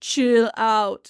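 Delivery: put-on Austrian accent. Describing Mister Freeze in a movie, the speaker quotes him in an Arnold Schwarzenegger accent. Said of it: "Arnold with the accent".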